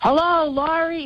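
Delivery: mock, very high, shrieking scream. Telling how a man suddenly called from around the corner at a lunch meeting, imitating someone screaming. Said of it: "screams from around the corner".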